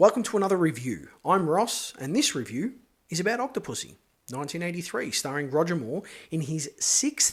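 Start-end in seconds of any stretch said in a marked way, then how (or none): 6.8-7.3 deliberate, slow, breathy, half-whispered "sixth". Film reviewer says which Bond outing it is, slow, careful "sixth". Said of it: "I had to say that word slowly".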